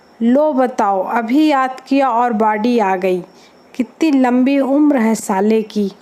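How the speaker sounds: usual speaking voice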